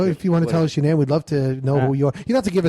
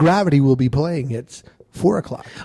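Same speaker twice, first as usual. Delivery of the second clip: put-on movie listing announcer voice. Acting out a voiceover class bit: Moviefone announcer voice. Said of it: "the guy from Movie Phone".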